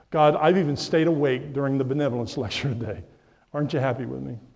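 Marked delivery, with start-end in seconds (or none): none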